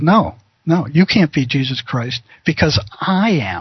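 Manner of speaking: severe, stern, serious tone. Retelling answering a man who claimed to be jesus christ, retelling in a stern voice. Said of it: "with a stern voice".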